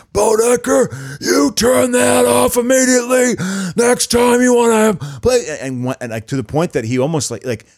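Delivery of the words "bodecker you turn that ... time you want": mock sergeant bark, higher, louder, slower. Retelling how a man scolded Bodecker, going full-on drill sergeant. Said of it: "he went full on drill sergeant".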